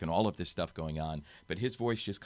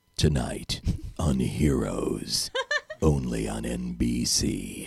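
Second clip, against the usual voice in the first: very slow, deep, dramatic announcer voiceover; 6 semitones lower, 7 dB louder than usual. Showing the difference between promo styles: dramatic serious promo voiceover. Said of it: "dramatic, serious, uh, N B C guy".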